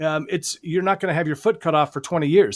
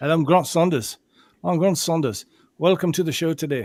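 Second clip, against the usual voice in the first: put-on, slightly Irish accent. Imitating Grant's accent after a comment about it: Grant accent impression, a little Irish. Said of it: "I sound a little more Irish".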